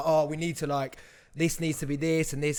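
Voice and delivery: ordinary talk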